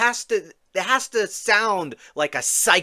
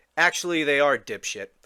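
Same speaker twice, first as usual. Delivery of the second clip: ordinary talk, nothing marked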